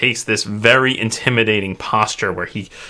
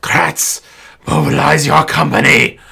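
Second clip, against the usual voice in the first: hissy, rasping, rough, creaky voice; 4 semitones higher, 4 dB louder than usual. A narrator voices a cobwebbed swordsman calling to kratz: hissy voice. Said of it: "This hissy voice comes out".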